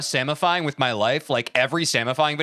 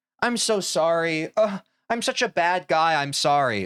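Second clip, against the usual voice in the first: slow, sarcastic, mocking put-on tone. Mocking a man caught in the act, acting out his mocking fake apology. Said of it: "He's like".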